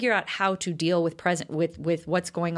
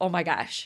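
irritated, annoyed exclamation. Retelling a mom's reaction to finding dad thinking: imitating an annoyed mom. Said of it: "annoyed because".

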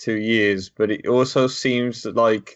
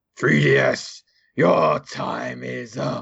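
creaky, drawn-out delivery. Joking that the console's end has come, voicing the Grim Reaper: Grim Reaper voice. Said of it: "was that voice?".

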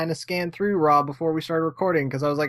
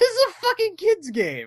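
put-on yell, higher pitched. Retelling playing a hard game and dying a lot: retelling own yell. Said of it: "I think at some point I yell at it".

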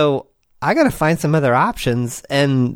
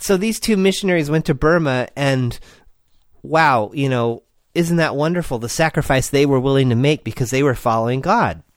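ordinary talk, nothing marked

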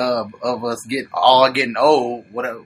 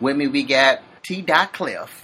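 plain

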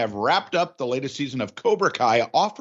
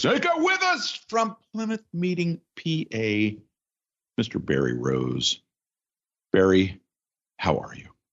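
very slow, swooping, solemn and slightly sad; 3 semitones lower than usual. Opening the show and introducing a guest, serious and a little sad. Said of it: "you sound so serious, maybe a little sad?".

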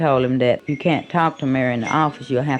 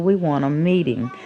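usual speaking voice

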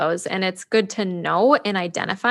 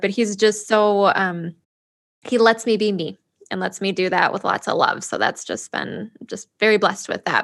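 teary-eyed voice close to tears. Talking about her husband: teary-eyed. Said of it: "I'm getting teary-eyed thinking about it".

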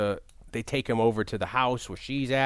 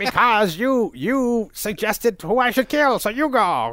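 very high, loud, drawn-out, swooping cartoon villain voice; 10 semitones higher, 6 dB louder than usual. Retelling a Skeletor scene with Evil Lyn, the speaker does the cartoon Skeletor voice. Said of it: "I'm going to talk like the one from the cartoon".

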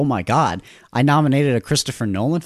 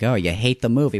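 ordinary talk, nothing marked

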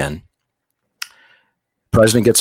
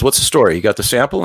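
ordinary delivery

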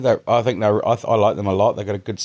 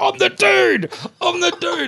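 put-on excitable voice, very high and swooping. Retelling how a van passenger woke up at a police checkpoint: imitating someone really excitable. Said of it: "Like this, just really excitable".

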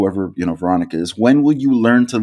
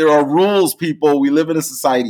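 raised-pitch mild yell, like a half-scream; 6 semitones higher than usual. Retelling a sitcom scene where a character loses patience, imitating George Costanza screaming. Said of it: "he just screams".

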